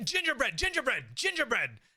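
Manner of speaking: very high, swooping, panicked yelling. Telling how a man woke up tied and started panicking, retelling a yell. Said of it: "starts yelling".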